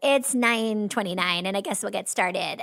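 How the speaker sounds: put-on nasal corporate voice with vocal fry. Imitating a comedian's corporate character starting a meeting: nasal Corporate Erin voice with vocal fry. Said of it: "nasally beginning of a meeting where she's like".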